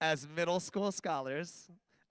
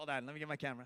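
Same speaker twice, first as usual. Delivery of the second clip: usual speaking voice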